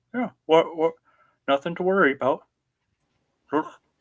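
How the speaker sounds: pretend talking while chewing. Playing a character who bites cheesecake and speaks: acting with a mouthful of food. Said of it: "mouthful of food".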